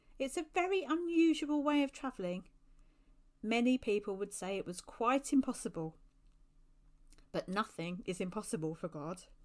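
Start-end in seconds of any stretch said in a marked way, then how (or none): none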